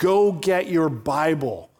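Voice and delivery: slow booming voice. Retelling a man's story of a voice in his head: booming voice of God. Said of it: "in a booming voice in my head".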